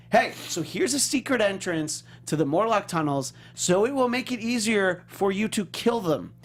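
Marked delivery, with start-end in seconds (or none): none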